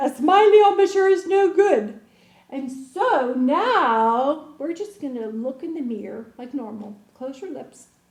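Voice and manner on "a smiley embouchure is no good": very loud, high-pitched, belted Irish brogue. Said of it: "with that Irish sound".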